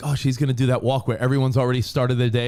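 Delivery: ordinary delivery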